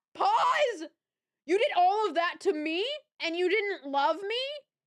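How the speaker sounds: high, loud, outraged disbelief.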